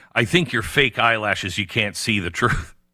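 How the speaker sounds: ordinary delivery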